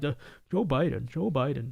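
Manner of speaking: stiff, mechanical, robot-like programmed delivery. Imitating someone as a robot who keeps saying Joe Biden: robotic monotone imitating Victor Shi. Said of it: "He's a robot".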